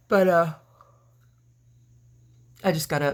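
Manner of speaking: speaking through a yawn. Having just got up, with no tea yet, yawning. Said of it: "Sorry about the yawning".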